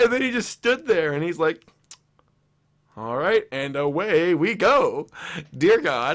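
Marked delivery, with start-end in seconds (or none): 3.0-6.2 fast horse race caller announcer delivery. Retelling what a man said before praying, racetrack announcer voice. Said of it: "Sounds like a racetrack announcer".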